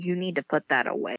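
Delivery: ordinary delivery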